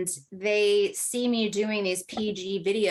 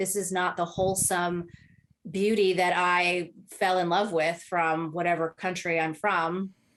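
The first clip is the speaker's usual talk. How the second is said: plain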